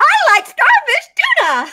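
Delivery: very high, loud, swooping goofy put-on voice. Retelling being asked to say it in another different voice; another different voice. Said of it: "Give us another different voice".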